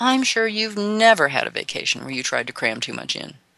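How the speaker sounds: ironic, pointedly sarcastic, swooping sing-song tone. Speaker addressing the audience about vacations, sarcastic. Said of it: "I'm being sarcastic here".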